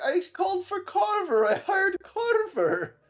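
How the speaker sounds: very high, very slow, swooping hysteria. Retelling a man's words after a botched killing, imitating someone in hysterics. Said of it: "he's just in so much hysterics".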